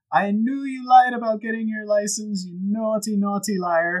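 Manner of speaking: put-on Dutch accent sliding into Jamaican. Quoting a character's first words in a put-on Dutch accent. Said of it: "that went a little Jamaican".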